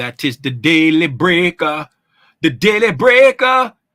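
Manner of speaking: booming, loud, badly done Jamaican accent. The speaker announces the daily breaker in a terrible Jamaican accent. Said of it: "My terrible Jamaican accent".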